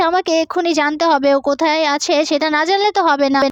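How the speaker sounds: ordinary delivery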